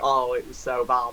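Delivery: ordinary talk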